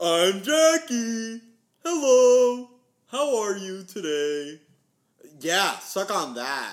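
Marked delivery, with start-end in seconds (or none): 0.0-4.6 very high, squeaky, slow, belittling caricature voice. Doing an impression of the other speaker, imitating Jackie. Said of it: "Is that your impression of me?".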